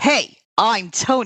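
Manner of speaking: casual put-on New York accent. Speaker retells men in bathrobes introducing themselves, imitating new york accent. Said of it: "New York Tonys".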